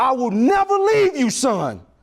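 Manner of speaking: all-out, high-pitched screaming cry. Father retelling what he screamed to his baby son on the fifth step, retelling his scream. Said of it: "all I can do is scream".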